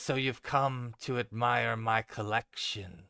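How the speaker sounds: wispy, airy, mumbled voice. Narrating a woman heard through a stairwell doorway, in a wispy voice. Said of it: "it is got a wispiness to it".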